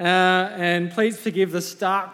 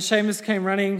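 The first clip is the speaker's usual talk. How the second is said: ordinary delivery, nothing marked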